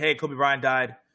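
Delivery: normal talking voice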